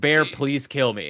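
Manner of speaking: put-on pleading voice. Retelling a movie scene, imitating Nikki pleading. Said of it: "literally pleading with him to kill her".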